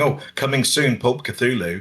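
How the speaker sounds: plain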